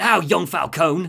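put-on London Cockney accent. Voicing Penguin threatening young Falcone: Penguin in Cockney accent. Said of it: "Cockney, Cockney".

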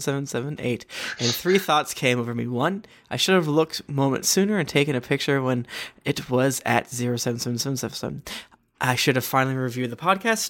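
normal talking voice

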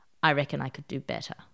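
mock, dry, flat, unamused deadpan delivery. Retelling a reply to a senior partner's joke: imitating own deadpan reply. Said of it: "without laughing".

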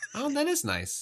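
very high, politely unthrilled, lukewarm tone. Reacting to a number called out, lukewarm unimpressed nice. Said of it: "you said that like you were looking at someone's new car".

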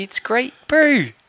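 very high-pitched put-on Kiwi bro accent. Practising accents with another speaker, switching to a kiwi bro accent. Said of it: "I'll have to talk in a Kiwi bro accent".

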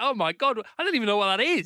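high, giddy, gleeful, delighted wonder. Retelling unpacking a vegetable box, imitating own gleeful excitement. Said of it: "you can hear the glee in my voice".

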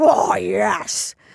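creaky, contented, gratified, satisfied man's voice. Joking about what men say afterwards: imitating a satisfied man. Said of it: "that's what men do when you have given them".

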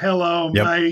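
mechanical, machine-like robot voice. Mocking the ones that sound like a robot, doing a robot voice. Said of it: "sound like a robot like this".

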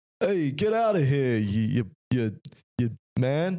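amateur, slow, put-on Boston accent. Trying out an accent after the other speaker calls out Boston: attempted Boston accent.

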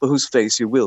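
ordinary talk

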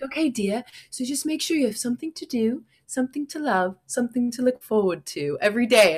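poorly done put-on British accent. Retelling what a british woman said: botched british accent. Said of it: "I'm not good at that accent".

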